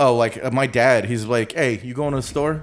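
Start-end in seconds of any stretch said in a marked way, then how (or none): 1.5-2.6 put-on Chicago-accented talk. Asked to do the Chicago accent, the speaker quotes their dad in a Chicago accent. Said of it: "Can you do the Chicago?".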